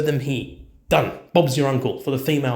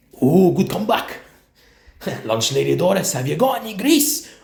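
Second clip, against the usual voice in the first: put-on Scottish accent character voice; 2 semitones higher than usual. Suggesting a better Scottish voice for a game commander, doing Groundskeeper Willie. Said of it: "Groundskeeper Willie".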